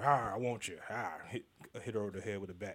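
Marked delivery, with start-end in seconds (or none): 0.0-1.1 slow, lumbering, put-on caveman voice. Joking about acting like a caveman to get a woman: caveman voice. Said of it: "I thought you was gonna go full caveman".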